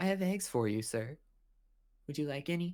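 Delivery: mild, gentle, nice-sounding voice. A burly middle-aged vendor offers eggs to a customer, in a soft voice. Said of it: "He has a nice soft voice when he talks".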